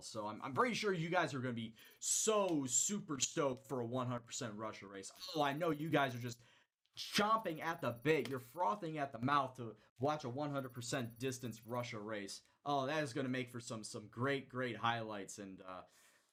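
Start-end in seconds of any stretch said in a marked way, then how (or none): 0.4-15.4 sarcasm laid on thick. Addressing the audience about the upcoming races, with heavy sarcasm. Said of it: "the sarcasm in my voice".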